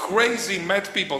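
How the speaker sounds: shouting.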